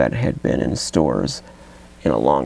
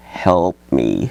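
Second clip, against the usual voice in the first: put-on mournful, pitiful zombie voice; 3 dB louder than usual. Showing off an old talking zombie toy, imitating a mournful zombie toy. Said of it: "he sounds really mournful and pitiful".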